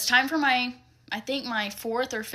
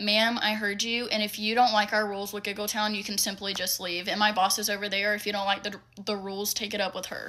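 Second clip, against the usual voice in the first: ordinary delivery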